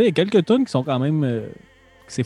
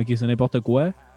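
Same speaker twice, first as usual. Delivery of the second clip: usual speaking voice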